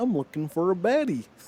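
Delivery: cartoon felt frog puppet voice. Retelling what a puppeteer says in online videos: Kermit the Frog voice. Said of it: "he does the Kermit voice".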